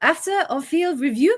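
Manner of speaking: put-on French schoolmistress voice. Joining in imitating a referee announcing a penalty: Stephanie Frappart voice. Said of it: "schoolmistress kind of voice".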